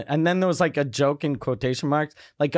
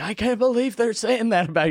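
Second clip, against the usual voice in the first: mock near-tearful voice, higher pitch; 7 semitones higher than usual. Retelling what he would say when he called: imitating someone almost crying. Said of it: "he was almost crying".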